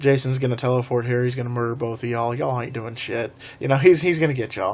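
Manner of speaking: ordinary talk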